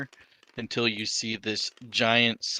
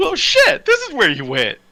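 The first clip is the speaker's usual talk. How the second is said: shrill, booming warlock voice, high, loud, swooping wildly; 12 dB louder than usual. Voicing the deal's warlock greeting Quincy: Garfield the warlock voice. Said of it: "and he's like".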